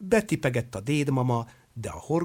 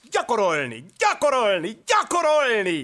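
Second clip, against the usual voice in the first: loud, very high, snapped out; 9 semitones higher, 4 dB louder than usual. As the circus grows famous, the circus director calls out, snapping ever louder. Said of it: "egyre hangosabban pattogott".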